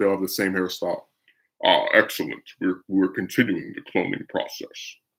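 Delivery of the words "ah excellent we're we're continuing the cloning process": commanding sci-fi villain voice, dark lord style. Acting out an imagined woman entering a room like Darth Vader: Darth Vader voice. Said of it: "Imagine the chick is like Darth Vader".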